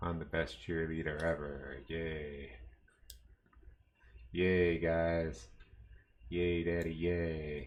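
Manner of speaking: flat, deadpan, depressed-sounding cheerleader delivery. Cheering in a game with fake spirit: depressed enthusiasm. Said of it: "You like my depressed enthusiasm?".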